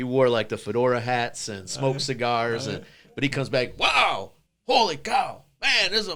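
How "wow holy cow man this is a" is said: put-on harsh Mexican accent, very high and slow. Retelling grandpa's reaction walking into the kitchen, harsh Mexican accent. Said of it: "he had a harsh Mexican accent".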